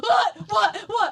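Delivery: very high, loud, startled yelps, blurted out.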